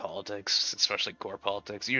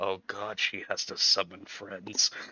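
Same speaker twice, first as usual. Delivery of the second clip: very slow, drawn-out muttered aside. Voicing a character's remark said aside: muttering under his breath. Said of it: "Under his breath, he goes".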